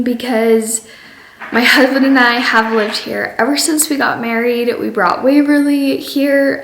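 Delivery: teary, catching voice, choking up, close to tears. Talking about leaving the home she has shared with her husband, choking up. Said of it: "Oh my gosh, I'm gonna cry".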